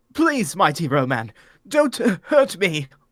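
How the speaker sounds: frightened, screamed pleading for mercy. The interviewer stumbles back from the mighty Ro-Man and begs him: screaming plea. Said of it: "Interviewer, Dr. [name]. / raising his hand in protection. / You will be the interviewer".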